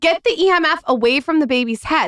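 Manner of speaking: mock shrieking, high-pitched scream. Retelling what they scream at people pushing a stroller, retelling a scream. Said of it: "I'm screaming".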